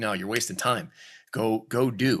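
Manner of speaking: ordinary talk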